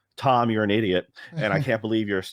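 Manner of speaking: ordinary talk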